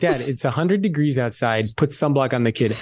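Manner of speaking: normal talking voice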